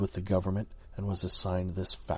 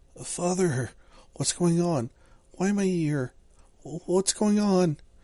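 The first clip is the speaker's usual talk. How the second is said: put-on very high, loud, frightened little boy's pleading cry; 11 semitones higher, 6 dB louder than usual. A narrator reads a child looking up at his father, scared child asking. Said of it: "It doesn't matter that you're furry, that you're half fox, half rabbit, in a man's form. / It doesn't matter that you're furry, that you're half fox, half rabbit, in a man's form. / [name] saw his fat".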